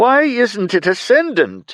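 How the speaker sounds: very high, sharp, swooping, sharply rising voice. Reading a character's puzzled question aloud: voice rising sharply. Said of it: "His voice rose sharp again".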